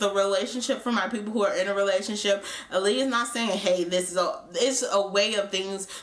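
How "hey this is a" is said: usual speaking voice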